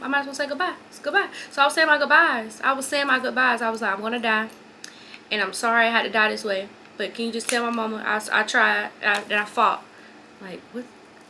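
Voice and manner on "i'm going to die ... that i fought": plain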